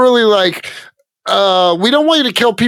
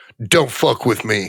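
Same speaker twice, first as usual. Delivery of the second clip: put-on quiet, stoic tough voice, lower and quieter; 11 semitones lower, 5 dB quieter than usual. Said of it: "quiet and stoic".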